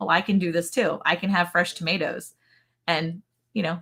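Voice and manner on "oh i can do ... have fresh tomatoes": plain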